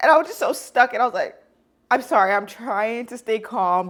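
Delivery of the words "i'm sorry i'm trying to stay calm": mock drawn-out, slow voice on the verge of tears. Retelling meeting someone after dropping keys: retelling own tearful words.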